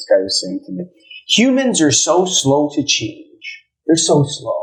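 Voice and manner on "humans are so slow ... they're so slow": slow, high-pitched, scornful and dismissive contempt. Retelling what another speaker said: imitating contemptuous tone. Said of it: "with contempt towards humanity".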